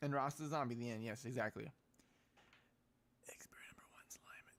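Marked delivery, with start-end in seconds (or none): 3.3-4.6 hushed, quiet whispering voice. Announcing the next experiment to the others: whispering. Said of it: "Why do you have to whisper it?".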